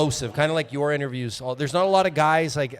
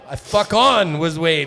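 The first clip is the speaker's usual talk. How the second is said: put-on loud, slow accented English with words drawn out; 3 semitones higher, 6 dB louder than usual. Retelling the player's second try at the line, imitating Teak's accent. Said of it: "Teak with his accent".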